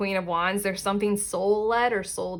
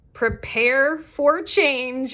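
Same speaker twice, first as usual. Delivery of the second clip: loud, full-throated shout; 4 semitones higher, 3 dB louder than usual. Giving the message of the last card in a reading, shouting. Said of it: "I'm shouting again".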